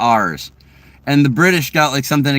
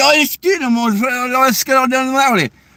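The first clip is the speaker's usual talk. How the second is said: very high-pitched put-on Scottish accent, drawn-out "let's"; 10 semitones higher than usual. Retelling lines from a Scottish movie: imitating a Scottish accent. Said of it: "And they're like".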